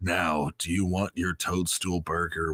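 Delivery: put-on gravelly cowboy voice. Customer service voice turning into a Clint Eastwood voice. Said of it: "my customer service voice turns into a weird like. It's Clint Eastwood. It goes".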